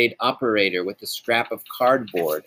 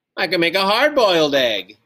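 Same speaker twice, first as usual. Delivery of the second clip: high, triumphant voice; 8 semitones higher, 4 dB louder than usual. Narrator reading their own reply to their mother about cooking, triumphant. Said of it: "and then said triumphantly".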